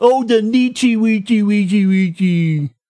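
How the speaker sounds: put-on babbling, silly baby-talk voice. Complaining about a mispronunciation, the speaker mocks it with baby talk. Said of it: "Nietzsche sounds like baby talk".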